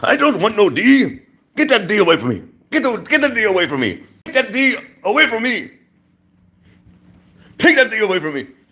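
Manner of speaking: very high, attempted put-on Greek accent. Quoting a man's line, trying his greek accent. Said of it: "I'm trying to use his Greek accent".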